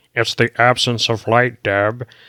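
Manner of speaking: nerdy little voice, done badly. Mimicking how he explained it scientifically to Deb, in a nerdy little Dexter voice. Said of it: "in your nerdy little voice".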